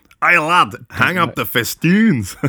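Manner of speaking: Scottish accent. Saying the word festoons sounds scottish, the speaker demonstrates: scottish accent. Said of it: "Is it like a Scottish thing?".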